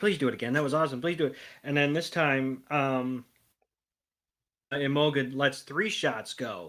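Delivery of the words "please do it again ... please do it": usual speaking voice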